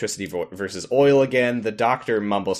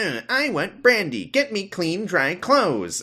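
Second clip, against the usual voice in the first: whiny, very high, swooping, sing-song; 10 semitones higher than usual. Retelling what Lord Palmerdale demands: whiny Palmerdale voice. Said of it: "really whiny".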